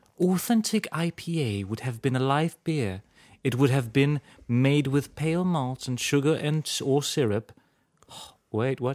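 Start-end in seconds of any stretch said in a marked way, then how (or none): 0.2-7.5 bad, overdone, horribly exaggerated British accent. Reading aloud about a British beer, in a horrible British accent. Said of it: "this is a British beer, so I'll read it in a horrible accent".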